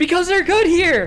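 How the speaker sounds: very high-pitched, loud hollering. Sitting up at home, shouting like a Little League coach. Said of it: "I'm just sitting up here shouting".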